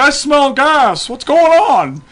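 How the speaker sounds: deliberate, drawn-out father voice. Retelling how his dad reacted on returning from a walk: imitating his father. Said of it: "I'm trying to do a, a father impression".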